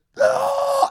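mock scream, very high and loud.

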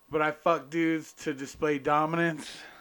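ordinary talk

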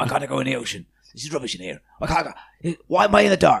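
muttering, complaining, grumbling octopus voice. Player voicing their octopus familiar stuck in a pocket dimension, grumbling octopus voice. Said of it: "But I like the octopus idea that while he's in the pocket dimension, he's still fully conscious. And because you're linked telepathically to your familiar once you summon it, I like the idea that he's".

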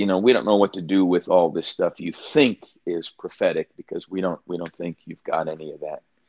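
usual speaking voice

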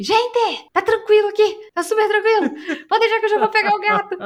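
very high, loud shouted call. Telling a story, the speaker quotes a man calling down from upstairs, retelling a shout. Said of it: "E gritou lá de cima assim".

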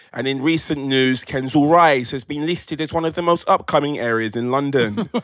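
TV newsreader delivery. Imagining a newsreader you watch every day, say the line in a newsreader voice. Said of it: "And they have that voice".

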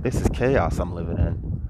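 usual speaking voice

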